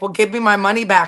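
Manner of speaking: mock-teasing, joking tone. Recounting what a man jokingly said about a fine, retelling a joking remark. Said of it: "And he jokingly was like".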